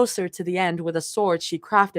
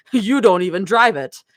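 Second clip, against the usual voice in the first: mock exclaiming, louder; 5 dB louder than usual. Retelling a character's accusation about a car: imitating an exclamation.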